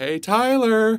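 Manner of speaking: high, loud, drawn-out calling out.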